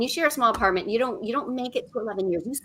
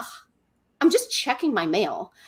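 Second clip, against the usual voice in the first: put-on unbothered, matter-of-fact, offhand tone; 3 semitones lower, 4 dB quieter than usual. Retelling a partner's answer from the bathroom: imitating an obvious, matter-of-fact reply. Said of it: "He just said it like I was supposed to know that".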